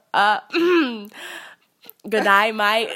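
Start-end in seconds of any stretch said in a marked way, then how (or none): 2.1-2.9 loud, bad fake Australian accent. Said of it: "Can you show us your Australian accent".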